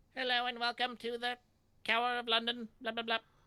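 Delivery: very high, level, flat monotone character voice. Voicing a police detective character as K-9. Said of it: "so I did her as K nine".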